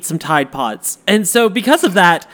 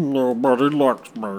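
put-on gloomy, self-pitying mope in a low, soft voice; 6 semitones lower, 6 dB quieter than usual. Mocking experts who feel nobody listens to them, in a mock-mopey Eeyore voice. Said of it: "they're like the Eeyores of the science world".

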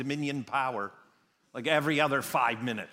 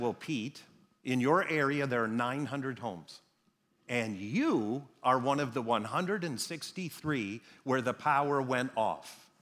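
ordinary talk, nothing marked

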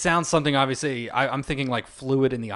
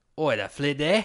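fake Australian accent, with oi up front. Joking about the word flid after it sounds australian: put-on australian accent. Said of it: "Sounds like an Australian word".

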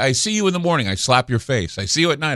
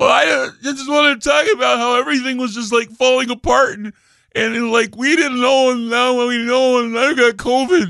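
derisive, very high-pitched voice; 11 semitones higher than usual. Making fun of Bill Gates getting COVID, doing a mocking Bill Gates impression. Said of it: "He's all".

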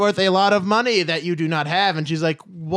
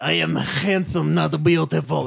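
put-on Russian accent. Retelling a scene, the speaker answers a woman calling him beautiful, as Demir in Russian accent. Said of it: "it's the voice I wanted to do".

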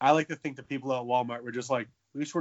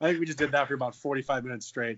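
normal talking voice

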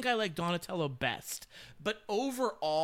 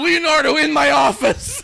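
put-on stern mentor voice, higher and louder; 5 semitones higher, 15 dB louder than usual. Joking about a mentor summoning a student: imitating Splinter scolding Leonardo. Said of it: "And he'd be like".

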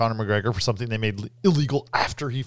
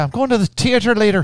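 very high, loud put-on Irish accent; 10 semitones higher, 8 dB louder than usual. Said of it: "to imitate an Irish accent".

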